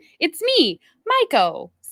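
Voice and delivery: put-on high, swooping, sing-song little kid voice. Imitating a friend's nephew's greeting: imitating a little kid. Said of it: "I actually speak little kid".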